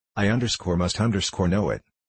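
ordinary talk

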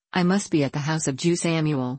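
plain reading voice

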